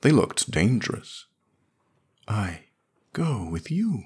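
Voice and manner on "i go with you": soft, very slow, halting words forced out with effort. Narrator reading her reply to Smith, speaking with difficulty. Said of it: "She brought it out with difficulty".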